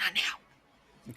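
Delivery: hushed, barely voiced mutter under the breath. Voicing Kiyoshara, who shoots Rusty a look: said under her breath. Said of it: "under her breath".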